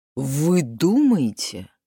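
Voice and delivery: dismissive, disdainful tone. The chauffeur answers the woman who warns him his life is in danger, dismissive. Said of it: "спросил он пренебрежительно".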